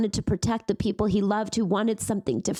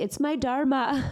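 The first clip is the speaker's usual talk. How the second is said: put-on Indian accent, pitched up; 5 semitones higher than usual. Quoting how he used to say his favourite line, put-on Indian accent. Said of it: "he'd put on an Indian voice".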